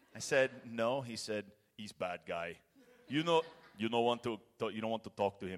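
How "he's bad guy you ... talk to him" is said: put-on Austrian-accented English. Retelling what a church leader said to the speaker, Arnold Schwarzenegger accent. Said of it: "he learned English from Arnold Schwarzenegger".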